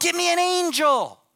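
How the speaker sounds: very high, very loud, drawn-out calling yell. Telling a story, the speaker acts out what they shouted back then, re-enacting a yell. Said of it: "I'm yelling. I'm going".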